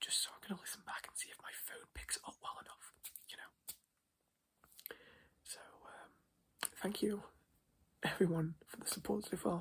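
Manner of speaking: whispering softly. Testing whether the phone picks up the voice, whispering. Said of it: "I'm also whispering right now".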